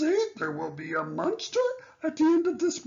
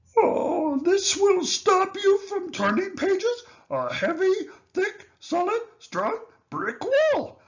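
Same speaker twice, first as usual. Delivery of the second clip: put-on lovable old furry puppet-style character voice; 4 semitones higher, 4 dB louder than usual. Trying to stop the reader from turning pages, lovable furry old character voice. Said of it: "starring lovable, furry old [name]".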